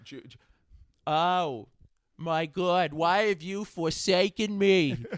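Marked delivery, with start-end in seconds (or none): 1.1-5.0 put-on very loud, shrill old woman voice.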